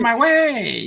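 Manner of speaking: very high, put-on cartoon villain voice. Doing a childhood cartoon character's voice for a friend, while reminiscing, in a cartoon villain voice. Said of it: "I'm doing the voice right now".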